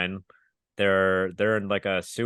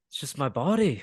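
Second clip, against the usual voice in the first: put-on Irish-sounding voice, pitched higher; 7 semitones higher than usual. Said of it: "your [name] is Irish".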